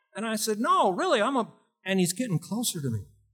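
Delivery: ordinary talk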